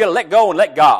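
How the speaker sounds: very loud Southern preacher accent, pulpit style. Quoting the kind of line a pastor says in sermons, in a southern accent. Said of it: "I feel the need to do this in a southern accent".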